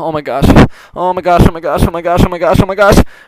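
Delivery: high, panicked, rapid babble tumbling over itself. Narrating a pony story as Rainbow Dash panics inside, panicked Rainbow Dash voice. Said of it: "[name] got picked to go find Pinkie".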